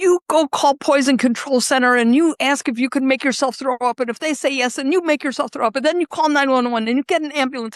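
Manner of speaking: play-acted high, barked yelling, one after another. Retelling telling a friend who took pills to get help: retelling yelling orders. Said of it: "So I start yelling at him".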